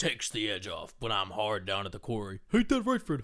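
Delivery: swooping, animated cartoon sidekick voice. Recalling an old commercial, the speaker acts out Barney talking to Fred, in a Barney voice. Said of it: "That was a pretty good Barney".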